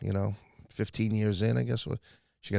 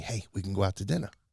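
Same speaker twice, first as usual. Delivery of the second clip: imitated whispering voice. Retelling a headliner's backstage invitation to dinner, imitating someone whispering. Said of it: "She whispers to me".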